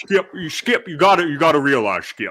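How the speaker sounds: put-on elderly-sounding voice. Addressing Skip, doing a Shannon Sharpe impression. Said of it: "you sounded like Sean Connery Connery mixed with".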